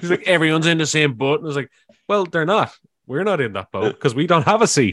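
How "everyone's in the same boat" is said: put-on speaking with Northern Irish accent. Retelling what a woman who wouldn't get out of their seat said, Northern Irish accent. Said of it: "so it's enjoyable to do her accent".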